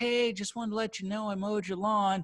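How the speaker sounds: play-acted patronizing, condescending, talking-down tone. Speaker acts out a neighbor knocking on the door, mocking a condescending neighbor. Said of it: "they do it in that condescending way".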